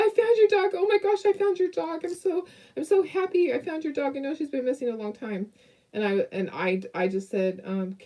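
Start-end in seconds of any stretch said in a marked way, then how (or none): 0.0-5.5 put-on excited voice, much higher, faster. Retelling a phone call from a lady who found the dog, mock-excited caller. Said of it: "She's so excited".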